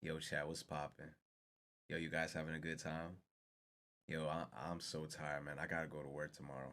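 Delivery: deep, hushed, very slow stoned drawl. Imitating how a very high man talks to chat, imitating someone talking very slow. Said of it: "very slow. He talking like this".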